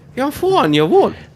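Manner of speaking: put-on Newcastle accent, pitched high.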